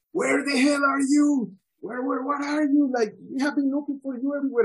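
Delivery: mock shrill, very high screaming and hollering. Retelling how a guy came up screaming while searching for the speaker: imitating a guy screaming.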